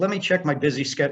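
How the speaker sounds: ordinary talk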